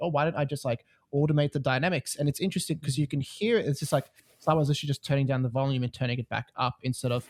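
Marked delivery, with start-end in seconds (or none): none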